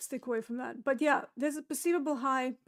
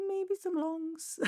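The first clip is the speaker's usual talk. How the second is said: very high, hedging, half-committed voice; 4 semitones higher than usual. Reviewing a 4-hour chart, hedging about possible longs: very high voice. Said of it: "I'd say that in a very high voice".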